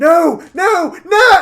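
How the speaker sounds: high-pitched, very loud, anguished scream. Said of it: "all you hear is [name] scream".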